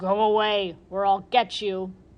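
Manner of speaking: slow, growling, menacing guard dog voice. Narrator voicing the guard dog as it sticks its head out at the fox; growling dog voice. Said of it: "stuck his head out and growled".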